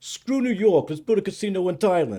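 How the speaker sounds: put-on New York accent. Asked by the host to redo the Thailand line, speaker does a New York accent. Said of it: "Can you do can you do that Thailand again in New York accent?".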